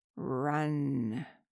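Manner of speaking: deep, very low, drawn-out rumble. Reading a story aloud, voicing a thing with gore-caked lips: low, rumbling tone. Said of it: "spoke a single word in a low, rumbling tone".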